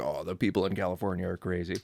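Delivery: ordinary delivery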